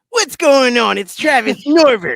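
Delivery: blaring, very loud, very high-pitched put-on character voice. Introducing oneself to the host in a put-on character voice. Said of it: "Is that his real voice?".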